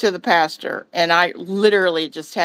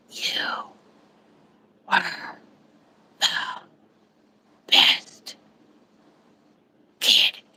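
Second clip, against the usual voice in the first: hushed, faint, barely audible whisper. Retelling a dying woman's last words to him: retelling a whisper. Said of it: "And then she whispers".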